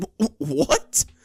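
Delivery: very high, stuttered, stammering disbelief. Reading a story aloud, a dumbfounded listener stammers: sputtering in disbelief. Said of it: "Trevor sputters".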